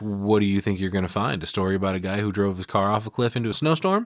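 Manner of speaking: ordinary talk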